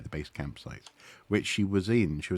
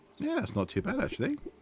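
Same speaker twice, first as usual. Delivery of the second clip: very high, piping little voice. The speaker comments to himself while tidying things up: very high-pitched voice. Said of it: "He says in a very high-pitched voice".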